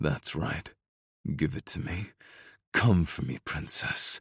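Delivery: growling through gritted, clenched teeth. A narrator reads a love scene; he speaks to her, growled through gritted teeth. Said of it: "I growled the words through gritted teeth".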